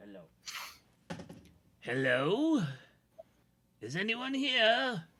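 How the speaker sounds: performed drawn-out calling voice, high, swooping, slow. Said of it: "I gotta, like, do my voice right".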